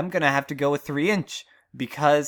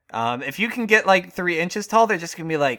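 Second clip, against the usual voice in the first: plain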